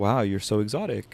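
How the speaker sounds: put-on flirty delivery. Retelling what a guy at a party said: imitating a flirtatious delivery. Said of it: "in a flirtatious, in an interested sort of way".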